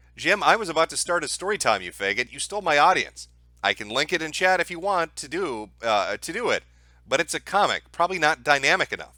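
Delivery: ordinary delivery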